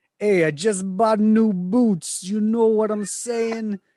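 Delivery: attempted Brooklyn accent. Suggesting what the other speaker should say next time, in a brooklyn accent. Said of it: "that was not your best Italian right there".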